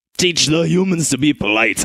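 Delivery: urging, egging-on dwarf character voice. Voicing a uniformed dwarf urging the others on: urging dwarf voice. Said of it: "urges another of the uniformed dwarves".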